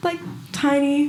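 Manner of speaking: put-on tiny high child voice.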